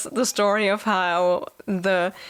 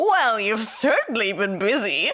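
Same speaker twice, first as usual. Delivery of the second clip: mock, pointed, backhanded sarcasm, swooping tone. Quoting a character's line from a book, imitating Morrigan sounding sarcastic. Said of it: "which kinda sounds sarcastic".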